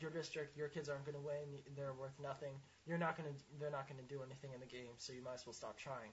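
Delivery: ordinary delivery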